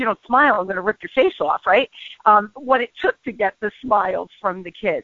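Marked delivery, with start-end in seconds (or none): none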